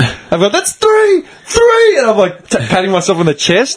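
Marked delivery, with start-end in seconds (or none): 0.5-2.0 mock, shrill, piercing, very high screaming shout. Retelling holding up three fingers at the other bench: retelling a scream. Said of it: "I'm fucking screaming".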